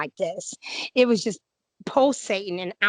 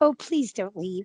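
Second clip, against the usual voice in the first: put-on whispering. Retelling a plea to a Bigfoot not to leave: imitating own whisper. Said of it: "I just kinda whispered".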